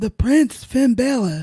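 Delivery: clumsy, bad put-on Irish accent. Announcing the winner of a match: bad attempt at Irish accent. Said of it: "a bad attempt at an Irish accent".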